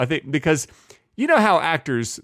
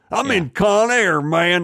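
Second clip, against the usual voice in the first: put-on Southern accent, higher pitch; 6 semitones higher, 4 dB louder than usual. Quoting Nicolas Cage in Con Air, Nicolas Cage impression. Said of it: "He does use that voice in Con Air".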